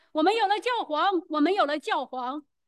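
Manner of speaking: ordinary talk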